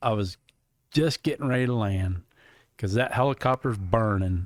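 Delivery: normal talking voice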